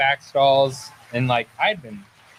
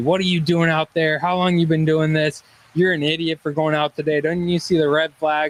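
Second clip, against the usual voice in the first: mock hectoring, scolding barrage, yelled; 3 semitones higher than usual. Retelling how a Coast Guard member confronted you on the beach, retell his yell. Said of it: "starts yelling at me".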